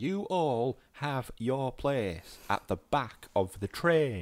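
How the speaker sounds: put-on broad Yorkshire accent. Retelling a film role's line: imitating Tilda Swinton's broad Yorkshire accent. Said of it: "really broad Yorkshire accent".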